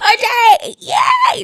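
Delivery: very high, loud crying scream of joy. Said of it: "we were screaming".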